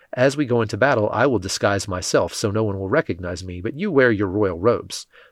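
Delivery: ordinary delivery, nothing marked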